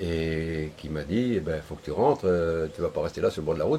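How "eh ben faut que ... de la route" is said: ordinary delivery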